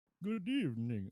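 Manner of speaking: high puppet-like vampire voice. Greeting a player who asked for the Sesame Street vampire voice. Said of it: "Can you be like the, the vampire from Sesame Street?".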